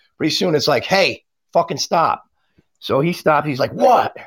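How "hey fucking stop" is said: mock voice raised a notch, blunt, no pleasantries. Retelling telling a man who wouldn't stop to stop, retelling a slightly raised voice. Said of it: "you raise your voice a little bit".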